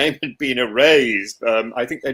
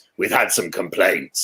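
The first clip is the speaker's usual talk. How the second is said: very deep, low head-teacher voice; 6 semitones lower than usual. Retelling what the head teacher said in her office: imitating a very deep voice. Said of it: "she had a very deep voice".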